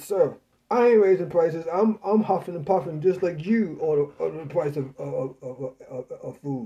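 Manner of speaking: ordinary talk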